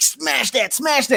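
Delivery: pumped-up hype-man delivery. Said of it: "He was like".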